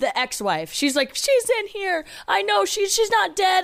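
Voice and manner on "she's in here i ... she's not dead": mock panicked, very high, frantic insistent pleading. Retelling a movie scene where the mom is freaking out: imitating a freaking-out mom. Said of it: "the mom's, like, freaking out".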